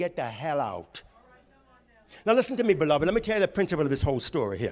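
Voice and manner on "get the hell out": put-on deliberate, low, slow Puerto Rican accent. Retelling a dream where Nellie throws the speaker out, Nellie in a Puerto Rican accent. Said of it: "and in Puerto Rican said".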